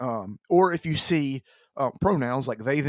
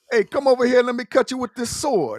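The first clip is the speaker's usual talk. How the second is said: very high, loud Italian mobster accent; 10 semitones higher, 6 dB louder than usual. Pitching a samurai game whose hero is an italian mobster, speak in an italian mobster voice. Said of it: "he's gonna be an Italian mobster".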